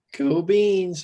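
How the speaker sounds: voice cracking mid-phrase, high and loud. Signing off the episode, voice cracking. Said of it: "my voice just cracked".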